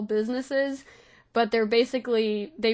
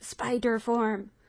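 whispering in a put-on voice. Voicing a character asking the group about using a secret form, whispering. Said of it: "and she whispers".

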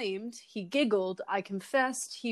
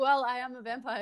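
usual speaking voice

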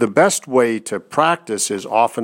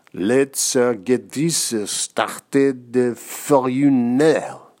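very slow, drawn-out, goofy French accent; 3 semitones higher than usual. Leading an exercise repeating a phrase in silly voices, Inspector Clouseau French accent. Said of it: "say it in a funny French accent".

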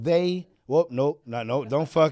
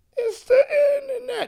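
Italian guy voice, much higher pitch; 3 dB louder than usual.

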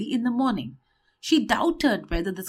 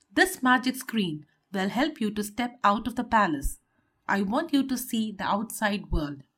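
plain

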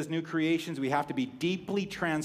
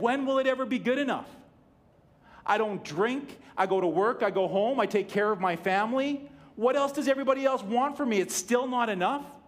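mock crying, high, tearful yelled outburst; 7 semitones higher, 3 dB louder than usual. Retelling own words on the phone: retelling own crying and yelling. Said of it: "I was crying on the phone, and I was yelling".

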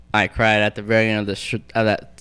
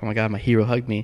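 ordinary talk, nothing marked

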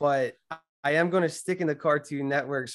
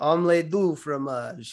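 slight, light put-on Russian accent. Helping a friend recall a French line from a show, with a slight Russian accent. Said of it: "I said it with a little Russian accent".

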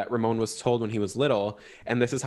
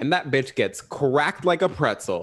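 usual speaking voice

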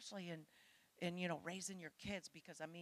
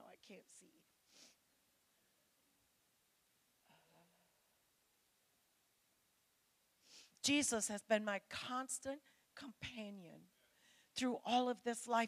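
tearful, crying while speaking; 4 semitones higher, 4 dB louder than usual. Addressing an audience about life's hardships, the speaker continues: crying while speaking. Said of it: "I'm sorry, I'm crying now".

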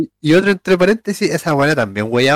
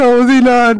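play-acted shout, loud and high-pitched; 8 semitones higher, 5 dB louder than usual. Retelling shouting goodbye to a former classmate in the street, retelling a shout. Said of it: "Y yo le grité".

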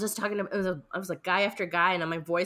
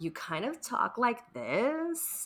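very slow, grainy, crackly creaky vocal fry; 5 semitones higher, 4 dB quieter than usual. Demonstrating for listeners what vocal fry sounds like. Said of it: "Can you demonstrate for our listeners who might not know what vocal fry sounds like?".

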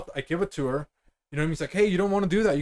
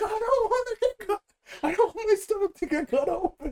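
put-on crying, much higher. Retelling how she panicked about the chainsaw, the speaker is imitating someone crying.

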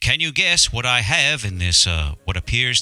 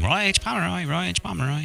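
little caged-bird voice, pitched up; 7 semitones higher, 4 dB quieter than usual. Telling what the pet bird repeats from downstairs: little bird voice. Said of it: "In his little bird voice".

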